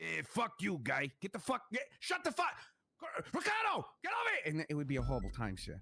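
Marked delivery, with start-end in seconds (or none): 0.0-4.5 high, abusive, dismissive bully voice. Retelling how the bully talked every visit: imitating his bully. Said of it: "he'd just be like".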